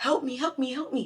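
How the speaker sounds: desperate, high, pleading cry.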